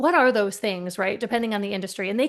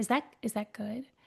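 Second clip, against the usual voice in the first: mock gentle, soft, empathetic, curious tone, trailing off; 9 dB quieter than usual. Retelling own past question to a burnt-out person: retelling a thoughtful, curious, empathetic question. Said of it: "in a really thoughtful and curious and, like, empathetic way".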